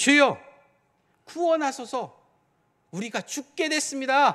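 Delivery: loud, exasperated, annoyed and angry cry. Acting out someone's words in a story, mock-exasperated and angry. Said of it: "이게 좀 짜증도 나고요, 화도 나고요".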